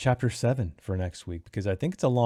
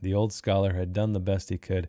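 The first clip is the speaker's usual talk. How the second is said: ordinary delivery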